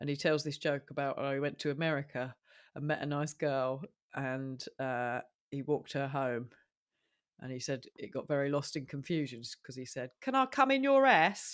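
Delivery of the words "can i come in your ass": put-on Cockney accent, pitched up. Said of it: "a comedian called Mickey Flanagan who's very Cockney".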